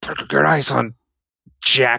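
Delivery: quiet, secretive whispering. Narrator voicing Arlington as he walks away, whispering into his coat. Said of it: "he's like whispering into his coat".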